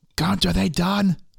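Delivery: shrill, rough, drawn-out, high, full-throated hollering. Calling back to Gunt from where the party came from: yelling at the top of lungs. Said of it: "I'm gonna yell at the top of my lungs".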